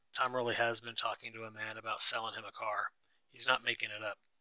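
plain

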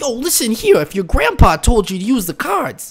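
high, swooping anime-style cartoon card-duelist voice. Told they have a rich voice, the speaker keeps talking like Joey Wheeler. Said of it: "I'm going to start talking like Joey Wheeler then".

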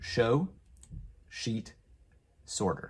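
slow, careful, word-by-word delivery.

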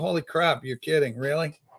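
ordinary delivery

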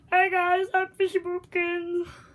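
loud, high, belted-out cartoon voice. Introducing himself to viewers as a Fishy Boopkins impression. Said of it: "doing the impression of Fishy Boopkins".

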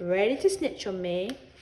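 ordinary delivery

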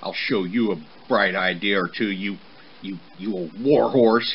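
whispered with snickers. Hiding behind a chili bush, the son insults his father: whispered, snickering. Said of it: "he whispered, snickering at his clever insult".

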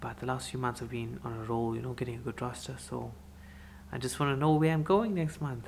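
hushed whisper. Someone is sleeping, so the speaker keeps talking in a whisper. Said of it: "I'm whispering because Priya is sleeping".

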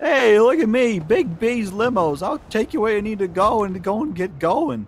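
put-on high, slow voice in thick Italian accent.

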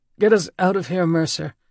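high, rasping, croaking voice. Narrator reads Poe speaking to Mercer as they flee, croaking voice. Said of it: "Poe's voice croaked".

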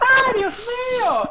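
high effeminate dub voice.

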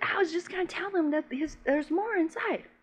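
put-on tiny, small, soft, high little-boy voice. Retelling a scene where a man scares a guy off: imitating his little voice. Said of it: "he does it with his little voice".

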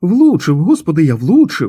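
thrilled, gleeful, loud, swooping delighted exclamation. Harold, having hit a man with his shot, exclaiming with delight. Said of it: "захоплено вигукнув Гарольд".

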